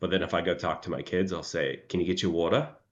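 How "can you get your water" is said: put-on heavier Australian accent, faster. Showing how the speaker talks to their kids, in a heavier australian accent. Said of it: "I actually try and put on more of an Australian accent".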